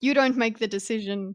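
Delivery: ordinary delivery, nothing marked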